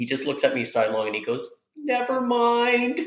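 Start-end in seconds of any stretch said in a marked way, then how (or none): 1.8-3.0 spent, gut-level, fragile, weak, very high voice. Speaker recounts a man looking at them sidelong and answering: imitating a fragile, weak voice. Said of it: "in the most like fragile, weak, gut level voice".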